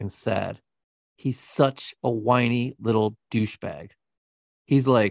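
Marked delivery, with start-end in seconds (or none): none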